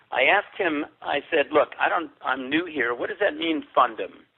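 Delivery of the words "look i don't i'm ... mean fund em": ordinary talk, nothing marked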